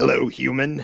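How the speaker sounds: committed goblin character voice. Describing a friendly goblin character, the speaker quotes his greeting in a goblin voice. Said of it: "he talks to you in a goblin voice".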